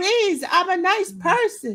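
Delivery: mock begging scream, high and drawn out. Retelling running through a haunted house: imitating own screaming pleas. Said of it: "I just kept screaming".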